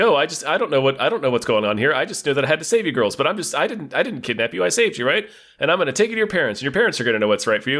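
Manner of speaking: hammy, fast, stammering, stumbling over words. Describing a scene, imitating a character's stammering, mugging acting. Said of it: "trying to do like a little bit of mugging and stammering".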